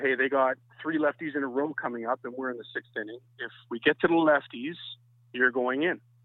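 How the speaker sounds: ordinary talk, nothing marked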